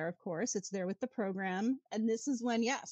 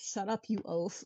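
whispered remark. Retelling an anecdote about a security incident, reenacting a man's whisper. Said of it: "Richard whispers".

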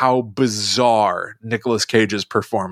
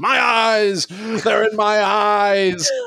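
hammy, high, very slow scream, "eyes" drawn out; 11 semitones higher than usual. Imitating a line from a movie scene: hammy Nicolas Cage scream. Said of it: "Nicolas Cage very hammily screams".

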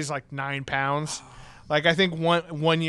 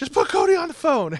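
very high, shrill, freaked-out yell; 11 semitones higher, 4 dB louder than usual. Act out your roommate on a call to your work, imitating a roommate yelling at whoever picks up. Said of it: "She's like yelling at the people picking up the phone".

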